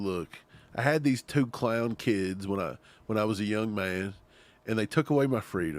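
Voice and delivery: ordinary talk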